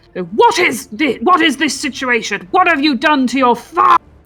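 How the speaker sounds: yell in an acted character voice. Making an intimidation check against a character: in-character yell. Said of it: "I'm gonna yell".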